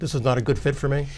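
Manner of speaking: ordinary talk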